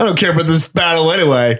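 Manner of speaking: sulky, sullen delivery, rattled off quickly. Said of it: "like, a nice guy when he gets, like, rejected by some chick".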